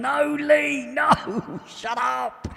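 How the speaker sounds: mock very high, very slow, drawn-out exasperated yell. Retelling how someone yells at him at the screen: mock-screaming, exasperated. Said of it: "Ted's normally there at the screen going".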